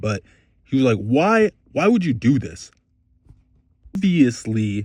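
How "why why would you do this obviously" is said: mock contemptuous, slow, belittling talking-down tone. Retelling a woman in a store berating a man over her child, mimicking a belittling scolding. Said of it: "exactly like that, with that kind of inflection".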